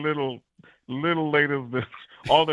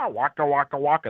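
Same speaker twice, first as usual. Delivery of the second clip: deep, barked sound pushed from the throat. Explaining how character voices relate, the speaker demonstrates: Fozzie Bear throat voice. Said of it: "a throat voice".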